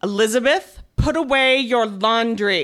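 slow, intimidating, stern dad voice. Retelling her dad confronting her on the stairs, imitating Dad's scary voice. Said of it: "said in his best scary dad voice".

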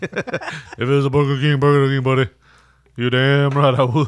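very loud, booming big-man voice at full volume. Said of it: "I don't know why I made him sound like [name]".

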